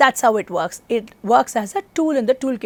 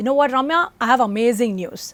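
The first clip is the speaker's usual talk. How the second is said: normal talking voice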